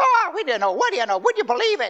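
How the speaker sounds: tiny, very high, swooping Irish voice. Recalling praying with Vera in her basement flat, imitating Vera's high Irish voice. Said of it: "And a little high voice, that's Vera".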